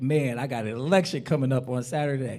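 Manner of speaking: plain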